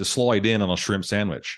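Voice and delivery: put-on, go-for-it Australian accent. Reading out an expression in their best attempt: Australian accent. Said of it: "I'll say it in my best Australian accent".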